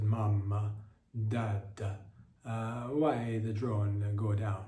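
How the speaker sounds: put-on slowly drawled Australian accent. Telling a story, quoting crying children asking their parents, australian accent. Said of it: "in their Australian accents".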